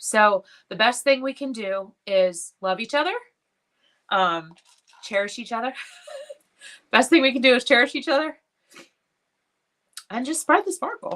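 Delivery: tearful, weeping speech, crying through the words. Speaking about people they have lost, the speaker talks while crying. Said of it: "I'm sorry that I'm crying".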